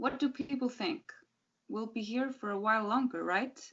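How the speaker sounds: plain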